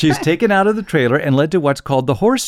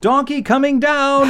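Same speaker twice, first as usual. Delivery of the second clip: high, slow mock yell. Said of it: "somebody yells".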